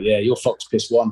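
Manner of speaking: put-on muttering under breath. Retelling a remark blurted out during a lecture: imitating muttering under breath. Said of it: "under my breath".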